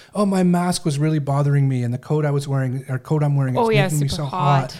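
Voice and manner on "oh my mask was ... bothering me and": usual speaking voice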